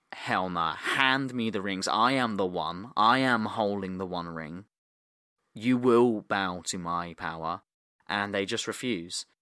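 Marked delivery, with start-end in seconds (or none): none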